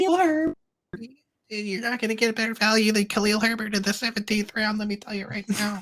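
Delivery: put-on very high, overexcited hype voice. Doing the voice the speakers made up for a zero RB fan: mocking zero RB fan voice. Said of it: "what was the voice that we did for the zero R B?".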